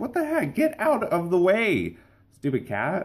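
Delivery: high-pitched, exasperated complaining tone. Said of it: "It's like".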